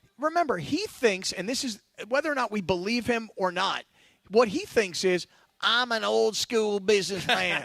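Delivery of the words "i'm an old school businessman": put-on southern businessman accent. Retelling how Jerry thinks about deals: Jerry Jones accent. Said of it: "You just wanna do the accent".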